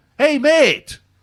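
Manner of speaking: very loud, very high, top-of-the-lungs shout. Retelling what a man on a train said: imitating someone shouting. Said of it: "he says at the top of his voice".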